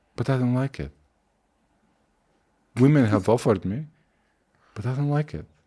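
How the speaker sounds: stone-cold serious, deadpan, no laugh. Retelling the reply of the guy preparing the food: imitating someone dead serious. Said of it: "dead serious".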